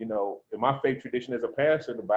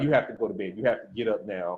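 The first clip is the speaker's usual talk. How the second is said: put-on anger, much lower; 3 semitones lower than usual. Retelling what their child said after the scare, imitating someone angry. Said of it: "like he was angry".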